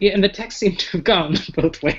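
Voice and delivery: high voice, words through laughter. Discussing an awkward role-play character, laughing while talking. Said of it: "I'm laughing about it".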